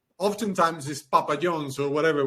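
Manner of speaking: plain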